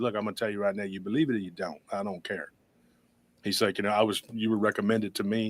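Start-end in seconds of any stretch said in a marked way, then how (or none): 0.0-2.5 put-on soft southern Mississippi accent, laid on thick. Retelling a phone call with a man from Mississippi, imitating his southern accent. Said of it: "and he just talked like this".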